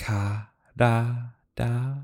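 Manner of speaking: really slow, seductive, each syllable stretched way out. Retelling a scene, quoting a woman speaking to a man: imitating slow japanese speech. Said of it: "she really does say it really slow in Japanese".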